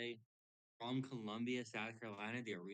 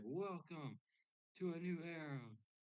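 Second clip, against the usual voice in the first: put-on wrestling announcer voice, higher and quieter; 6 semitones higher, 4 dB quieter than usual. Imitating an expected wrestling announcement: Triple H impression. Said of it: "It's just Triple H. He's gonna be like".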